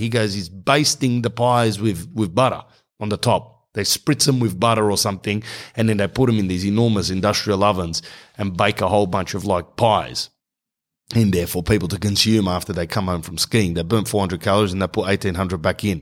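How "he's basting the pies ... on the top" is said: ordinary delivery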